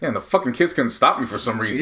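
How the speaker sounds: ordinary talk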